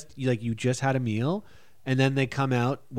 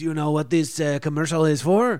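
loud, odd, weird put-on French accent; 3 semitones higher, 5 dB louder than usual. Retelling a commercial job, quoting the man who questioned him: Bernard's weird French accent. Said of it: "he had like a weird French accent".

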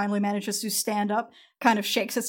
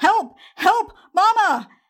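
put-on very high, very loud shouting child's cry; 11 semitones higher, 9 dB louder than usual. Narrating a scene, the storyteller voices a child calling out, child's voice shouting. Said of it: "A child's voice shouting".

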